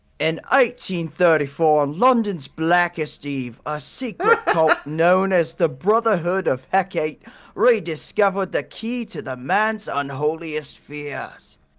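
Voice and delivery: slow, put-on Cockney accent drifting toward Australian. Reading a dramatic story intro aloud for listeners: attempted Cockney accent. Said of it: "You need some sort of Cockney accent".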